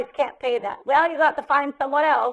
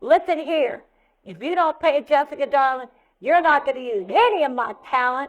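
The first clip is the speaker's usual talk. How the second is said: put-on Southern-accented voice. A speaker retells Jim calling people who hadn't paid her, imitating Jim in southern accent. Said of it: "in a southern accent".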